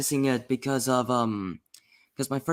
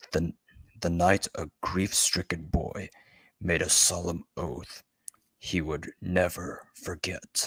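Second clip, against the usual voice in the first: put-on gruff, lower-pitched superhero voice; 6 semitones lower than usual. Reading a passage from a book aloud: Kevin Conroy Batman impression. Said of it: "do my best Kevin Conroy impression of Batman".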